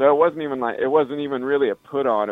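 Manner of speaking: normal talking voice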